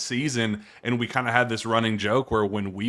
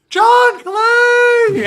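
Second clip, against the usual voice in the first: put-on scream, higher and louder; 13 dB louder than usual. Retelling spotting a friend across the upper deck: imitating own scream.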